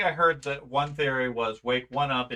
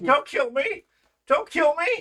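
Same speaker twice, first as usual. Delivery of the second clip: very high, loud, pleading sobbing cries; 13 semitones higher, 5 dB louder than usual. In an acted scene between two characters, sobbing. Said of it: "He's just sobbing".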